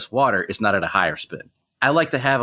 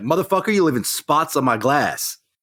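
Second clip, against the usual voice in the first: imitated yell, much higher; 5 semitones higher than usual. Acting out an imagined man yelling at his dishwasher, imitating a yell at a dishwasher. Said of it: "he yells at the dishwasher".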